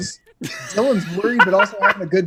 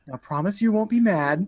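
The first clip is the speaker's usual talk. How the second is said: mock sugar-sweet, sweetest, gentlest innocent-sounding voice; 4 dB quieter than usual. Retelling how he pulled something out and spoke to Gal, imitating his sweetest voice. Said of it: "the sweetest voice he like actually has".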